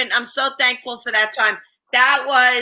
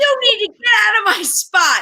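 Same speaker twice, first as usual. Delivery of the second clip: put-on screaming, much higher pitch; 9 semitones higher than usual. Retelling confronting a man in their spot, retelling a yell. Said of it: "I'm screaming at him".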